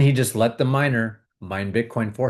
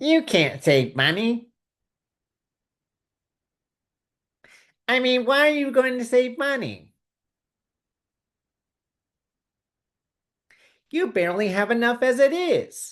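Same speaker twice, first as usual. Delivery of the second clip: whiny, complaining voice, very high and drawn-out; 13 semitones higher than usual. Acting out the whiny voice in the speaker's head: put-on whiny voice. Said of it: "that whiny voice sounds like this".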